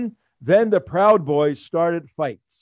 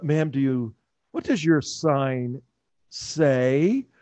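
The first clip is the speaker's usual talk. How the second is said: mock sarcastic tone in a put-on reporter voice; 3 dB quieter than usual. Retelling a reporter questioning a protester about her sign: imitating a sarcastic reporter. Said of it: "very sarcastically".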